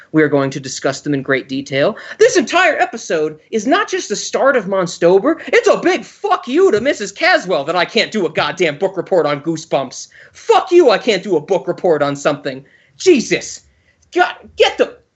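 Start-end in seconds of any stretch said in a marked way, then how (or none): 10.3-14.8 furious, pissed-off, angry rant. Speaker venting to his co-host, angry ranting. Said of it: "I'm pissed".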